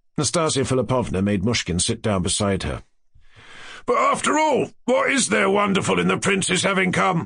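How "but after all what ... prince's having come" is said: very high, loud, rough cry, calling out over others. Ferdyshenko, amid the talking company, crying out loudly. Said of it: "Ferdyshenko cried louder than all of them".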